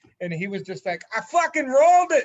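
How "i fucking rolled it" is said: put-on very loud, shrill, high yelled thick Boston accent. Quoting a guy who chirped the group over Zello, thick Boston accent. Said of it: "he had a thick Boston accent".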